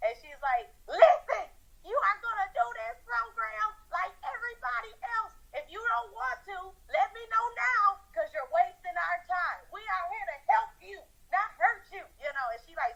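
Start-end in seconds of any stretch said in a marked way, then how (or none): 0.9-12.1 put-on, high, shrill, scolding scream. Retelling what she said to them in the program: imitating someone screaming. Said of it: "screamed at me like".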